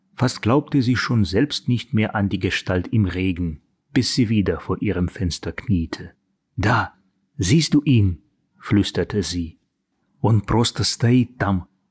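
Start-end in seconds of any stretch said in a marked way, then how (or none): 10.2-11.7 whispered, slower. A girl pulls someone into her room and tells him: whispered. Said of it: "прошептала Мэгги".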